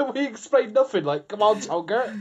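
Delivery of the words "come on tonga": put-on Somerset accent, higher pitch. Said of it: "that's my Somerset accent".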